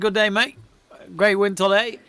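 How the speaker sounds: clumsy attempted Australian accent. Pretending to be his impersonator, admitting he can't do accents: attempted Australian accent. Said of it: "maybe I should be his impersonator ... I can't do Australian accents".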